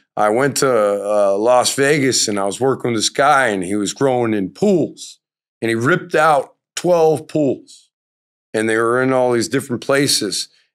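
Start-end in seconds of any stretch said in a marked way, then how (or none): none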